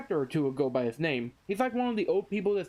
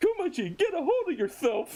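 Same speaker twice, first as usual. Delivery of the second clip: acted, shrill, very high-pitched shout; 9 semitones higher than usual. Retelling a manga scene where someone yells at Kuma: retelling a yell. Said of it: "someone yells".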